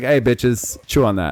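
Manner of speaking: fun, light, teasing delivery. Showing how a word can be said in a fun way: playful, fun tone. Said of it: "if you say it in a fun way".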